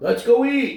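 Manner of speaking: very high, eager, excited yell. Suggesting going out to eat, yelling excitedly. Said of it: "Why are you yelling?".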